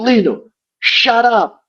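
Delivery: high, impersonated scolding voice.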